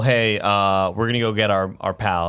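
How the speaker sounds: ordinary delivery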